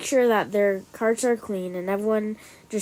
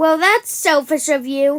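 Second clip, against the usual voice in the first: put-on entitled voice, high and loud; 6 semitones higher, 7 dB louder than usual. Acting out an exchange with grocery store workers: put-on entitled Karen voice. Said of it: "I'm doing the entitled Karen voice".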